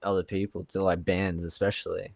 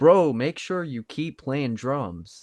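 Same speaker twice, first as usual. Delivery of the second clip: put-on proper American accent, pitch raised; 6 semitones higher, 5 dB louder than usual. Telling friends about meeting a band, the speaker quotes words to the drummer in a proper american accent. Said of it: "proper American accent".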